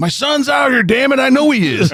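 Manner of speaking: high, loud yell.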